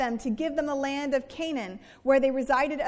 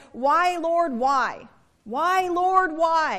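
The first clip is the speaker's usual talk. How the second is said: mock, loud, very slow, drawn-out, anguished voice; 2 semitones higher, 5 dB louder than usual. Speaker quoting a man complaining to god, acting out anguished pleading. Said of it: "you can hear the anguish in his voice".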